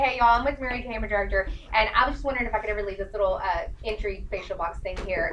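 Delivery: plain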